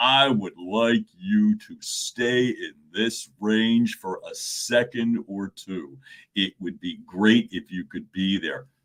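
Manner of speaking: voice dropped down to bottom of low register. Leading a vocal warm-up, taking the voice down: low register voice. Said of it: "Let's take it down".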